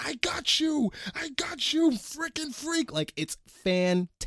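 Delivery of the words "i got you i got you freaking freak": mock very high, booming, drawn-out screaming. Acting out Colin Farrell's character after he causes the car wreck, imitating Colin Farrell screaming. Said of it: "he starts screaming".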